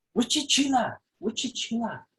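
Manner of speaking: put-on high, sing-song baby talk. Retelling how they spoke to their border collie during training, in dog baby talk. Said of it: "a kind of baby talk for dogs".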